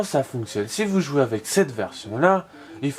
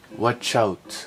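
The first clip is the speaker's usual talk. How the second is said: self-mocking, attempted English accent; 2 semitones lower than usual. Warning the audience in english, with an attempted english accent. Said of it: "vous avez vu mon superbe accent anglais".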